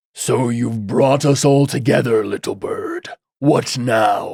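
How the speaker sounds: grumbling, grumbly masculine character voice. Voicing a masculine character speaking to someone he calls little bird, deep, grumbly voice. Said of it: "he said it's like a deep, grumbly voice".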